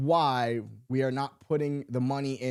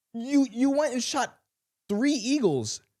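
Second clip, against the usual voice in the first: ordinary talk, nothing marked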